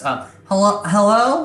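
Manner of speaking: small, high, nasal goblin voice. Voicing a character who answers a visitor, in a little nasally voice. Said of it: "immediately a little nasally voice".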